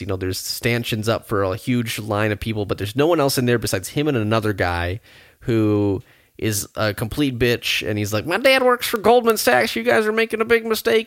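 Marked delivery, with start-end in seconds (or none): 8.3-11.1 mock whining in a very high voice. Retelling a man at a DMV-type office, imitating him whining. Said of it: "he's just whining".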